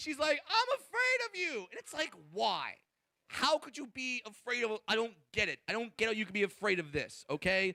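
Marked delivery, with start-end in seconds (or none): 0.5-1.6 play-acted very high, shrill, panicky, freaked-out yell. Retelling what the audience member shouted at the comedian: imitating a woman yelling. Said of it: "and then she yells at me".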